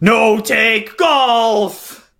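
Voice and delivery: monster-like cry with "golf" stretched out brutishly. Voicing a slime monster as it hits a player: monster shouting. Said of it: "and it shouts as it".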